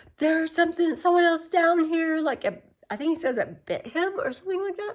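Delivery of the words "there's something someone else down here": high, panicked, blurted freaking-out voice. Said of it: "he's, like, freaking out".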